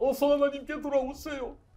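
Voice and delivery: fake crying, weepy, preacher-style pleading tone.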